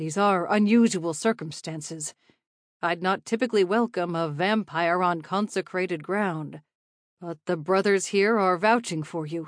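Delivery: plain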